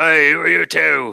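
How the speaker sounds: rough, high-pitched bellowing bugbear roar. Voicing a guard who spots the party down the hallway: roaring. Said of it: "you hear this roar".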